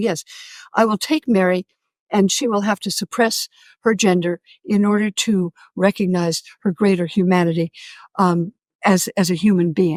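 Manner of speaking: ordinary talk, nothing marked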